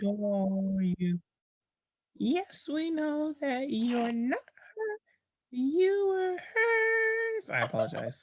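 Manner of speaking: loud, very high, sing-song little witch voice. Performer voices a character in a scene, little witch voice. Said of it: "You sound like a little witch".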